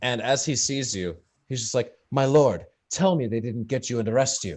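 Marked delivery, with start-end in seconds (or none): 2.1-4.6 weeping, tearful voice, crying through the words. Narrator voicing Bimothy in the stockades as the players arrive, weeping. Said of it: "He's weeping a bit in the corner".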